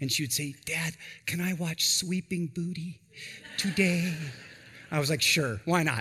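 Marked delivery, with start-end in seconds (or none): 0.6-4.1 put-on small girl voice lisping her words. A father retelling his young daughter asking to watch a film, imitating a little girl's lisp. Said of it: "this lisp. She couldn't quite pronounce Sleeping Beauty".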